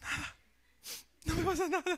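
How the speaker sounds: put-on weepy, sobbing crying voice. Acting out a wife asked why she is crying: imitating a crying wife. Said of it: "¿por qué estás llorando vos?".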